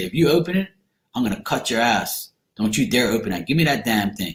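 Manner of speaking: ordinary talk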